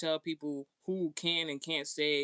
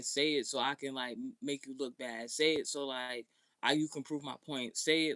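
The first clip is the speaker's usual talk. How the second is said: ordinary talk, nothing marked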